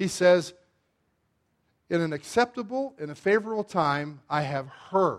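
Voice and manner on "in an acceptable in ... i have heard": heard stressed, slowed and dropped low. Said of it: "Underline heard".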